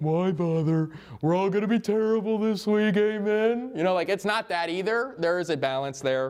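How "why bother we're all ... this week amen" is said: mopey, gloomy donkey voice, a bit high. Mocking gloomy preaching in a put-on Eeyore voice. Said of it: "Anytime I can pull in the Eeyore voice".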